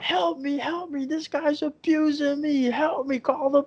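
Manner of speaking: shrieking, very high, drawn-out scream. Retelling how a woman screamed for help: imitating someone screaming for help. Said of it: "just starts screaming and yelling".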